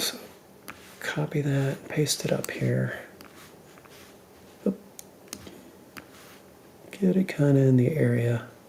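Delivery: soft, hushed whisper. Speaker whispering because everyone in the house is still asleep. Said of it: "I'm whispering because everybody in the house is still asleep".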